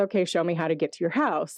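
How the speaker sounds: ordinary delivery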